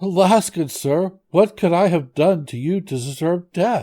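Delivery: high, quavering, trembling, terrified voice. A merchant answers a monster who has threatened to kill him, trembling voice. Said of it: "answered him trembling".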